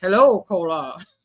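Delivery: put-on robotic voice. Act out how the robot greeted cola, in a robot voice. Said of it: "I want the robot voice though".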